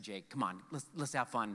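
coaxing, playful voice. A dad retells urging his son Jake to have fun; retelling playful coaxing. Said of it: "dad coaxing son playfully".

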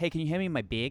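bag pronounced like beg. Imitating how Canadians say the word big: imitating a Canadian accent. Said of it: "people from Canada who have completely normal ac-".

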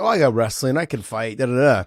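normal talking voice

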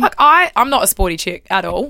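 ordinary delivery

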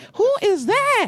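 high, laughing, excited gush, squealed and giddy.

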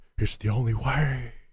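mock cinematic, solemn dramatic delivery.

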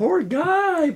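high put-on woman's voice.

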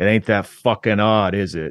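put-on Boston accent. Retelling what a man said to him, in a Boston accent. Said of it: "He's got a Boston accent".

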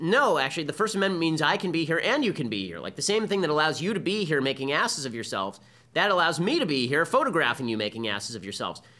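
plain

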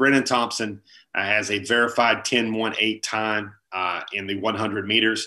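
ordinary talk, nothing marked

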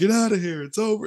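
loud, high shouting. Retelling a movie's post-credit scene where a man yells at the screen: imitating someone yelling. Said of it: "just yells at the screen".

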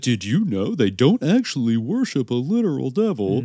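earnest news reporter voice.

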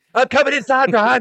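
shrill, very loud, high cartoon kid voice. Recalling an old Stone Cold moment with Brian Pillman, in a young Stone Cold voice. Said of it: "That was very Cartman".

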